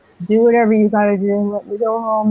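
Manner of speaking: put-on sedated, calm, whimpering voice. Retelling giving in while something stroked their forehead: retelling own whimpering. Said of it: "I was just like kind of whimpering".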